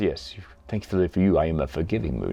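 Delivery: low, hushed, quietly sarcastic tone. Quoting the character forgiving a subordinate: sarcastic Darth Vader. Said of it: "he's a little bit sarcastic".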